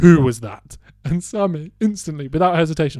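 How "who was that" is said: very loud, booming, forceful delivery. Retelling a disliked teacher coming back to ask who swore: Darth Vader voice. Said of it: "comes back aund like Darth Vader and goes".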